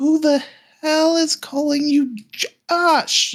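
high, shrill woman's voice. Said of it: "you hear a woman's voice".

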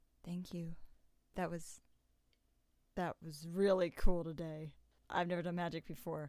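put-on whisper. Describing taking a rock from their pocket in the shower, retelling a whisper. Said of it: "and I just whisper".

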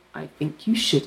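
quiet, serious, stern, held-back reproachful tone. Recapping a scene where Ally answers Billy's confession: imitating Ally, stern and quiet. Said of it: "Ali's really stern".

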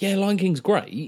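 high, drawn-out, breezy, casual tone.

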